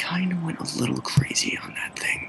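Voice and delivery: very quiet, breathy whisper, barely audible. Acting out what he's going to say, whispered very quietly. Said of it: "he's just gonna whisper this, like, very, very quietly".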